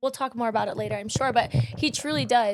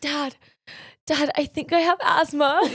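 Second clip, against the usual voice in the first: acted, mock gasping for air, out of breath; 4 semitones higher, 4 dB louder than usual. Retelling telling their dad as a child they have asthma, acting out gasping for air. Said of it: "I'm just like gasping for air".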